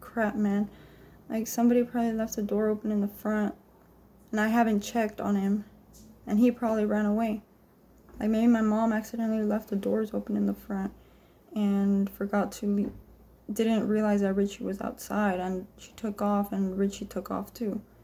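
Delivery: plain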